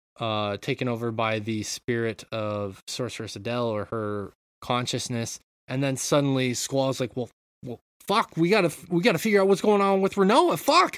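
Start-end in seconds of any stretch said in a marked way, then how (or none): 7.2-11.0 frantic, freaked-out swearing, high, loud and rushed. Retelling a game scene where Squall panics about Rinoa: imitating Squall freaking out. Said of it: "freaking out".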